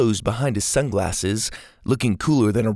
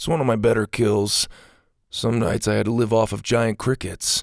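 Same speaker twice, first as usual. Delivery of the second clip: ordinary delivery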